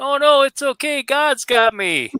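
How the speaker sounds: put-on hollering yell, very high pitched. Telling a joke, voicing the man yelling up to the helicopter; retelling a yell. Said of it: "he yells back up".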